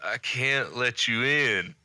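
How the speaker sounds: put-on acted groggy, just-woken, slow half-drunk delivery. Retelling a movie scene where he wakes up: imitating Luke Perry half drunk. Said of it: "half drunk".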